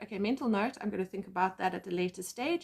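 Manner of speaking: ordinary talk, nothing marked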